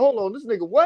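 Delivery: mock furious, high, angry outburst. Retelling how a man reacted on finding out: imitating someone angry. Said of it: "he was blowed like a motherfucker".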